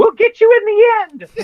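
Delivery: very high, loud, squeaky menacing voice. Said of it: "They're like".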